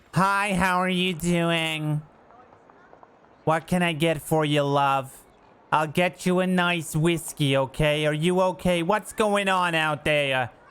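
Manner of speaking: high, slow tavern wench character voice. Suggesting a role for a friend, acting out a tavern wench: tavern wench voice. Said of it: "play like a fucking tavern wench".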